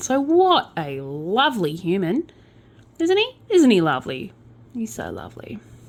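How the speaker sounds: dripping, mocking, slow, sing-song sarcasm. Recounting a criminal's offences, the speaker comments on him, sarcastic. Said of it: "I'm being sarcastic again".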